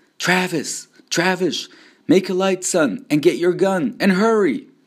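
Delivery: very high, loud, fearful, urgent calling out. A narrator reads Mama calling to her son Travis, frightened calling. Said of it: "calling in a frightened voice".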